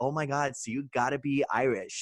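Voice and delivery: put-on American accent. Imitating people who assume the speaker is Irish, in a put-on American accent. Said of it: "was that your American accent?".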